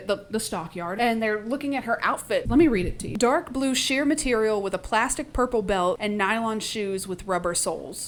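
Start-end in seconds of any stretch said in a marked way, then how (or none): none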